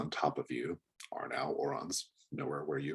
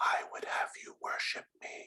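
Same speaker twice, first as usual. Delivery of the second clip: close, hushed, soft whisper. A character pulls your face close and speaks into your ear, whispering in your ear. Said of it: "pulls your face close and whispers".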